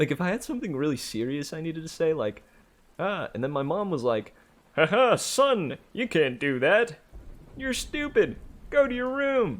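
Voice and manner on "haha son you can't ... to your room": very high, goofy, drawn-out motherly voice. Speaker mimics his mom brushing him off, in a goofy voice mocking mom. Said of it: "I'd always switch into like some kind of like goofy voice whenever like quote unquote mimicking them".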